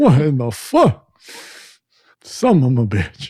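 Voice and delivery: swooping, wide, incredulous, baffled cursing. Retelling your reaction to a CDR you put on in your truck, use a Bernie Mac voice. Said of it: "But like Bernie Mac voice".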